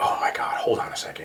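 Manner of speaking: mock bored, irritated, hushed, breathy, not panicked at all. Retelling how a woman answered while her boyfriend screamed outside, with an eye-roll tone. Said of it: "With an eye roll".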